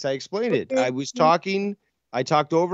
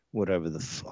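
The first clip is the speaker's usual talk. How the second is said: whispered mutter under the breath; 10 semitones lower, 10 dB quieter than usual. Retelling what someone said after being spoken over: imitating a mutter under breath. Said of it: "under his breath, he says".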